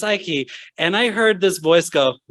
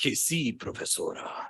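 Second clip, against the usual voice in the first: put-on overly deep voice, nearly whispered; 5 semitones lower, 12 dB quieter than usual. Retelling answering a spanish professor, the speaker imitates their own really deep voice. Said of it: "spoke Spanish with this really deep voice".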